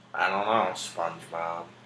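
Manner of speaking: bored cartoon voice. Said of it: "you just gotta sound easily and bored".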